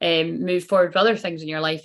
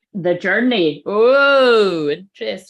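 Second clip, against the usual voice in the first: very loud, drawn-out exclamation, "oh" stretched long; 2 semitones higher, 7 dB louder than usual. Speaker exclaims to Claire, then admits it was too loud: very loud. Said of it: "I said it very loud".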